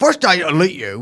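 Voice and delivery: put-on odd, bizarre mixed English-American accent. Reading a quote aloud, trying to get it right: Andrew Tate impression. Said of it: "an impression of Andrew Tate in his bizarre English American accent".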